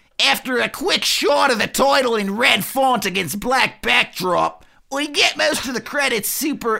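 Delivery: very high-pitched, sneering Australian accent. Trying out an accent while reading a film description aloud, sneering australian accent. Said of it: "sneering Australian".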